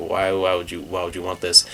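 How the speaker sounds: ordinary talk, nothing marked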